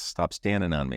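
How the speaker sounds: usual speaking voice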